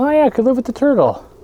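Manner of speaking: high mock sudden-realization voice.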